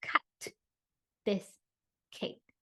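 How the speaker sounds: popped, held first sounds in cut, cake. Demonstrating emphasis on beginning sounds, with popped, held-out word beginnings. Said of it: "I added a little pop. I held out the sound".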